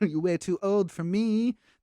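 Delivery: put-on weird British accent, pitched high. Retelling a scene, imitating Ivy's weird British accent. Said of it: "That wasn't any better the second time".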